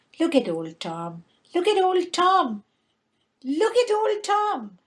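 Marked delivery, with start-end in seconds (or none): 1.6-4.7 startled, high, rising cry of alarm. The sexton's wife, sitting by the fireside with her cat; screaming.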